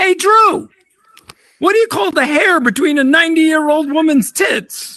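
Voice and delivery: shrill, very high-pitched hollered yell. Recounting his grandfather shouting a joke at him across the room, retelling a yell. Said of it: "he yelled out as loud as he could".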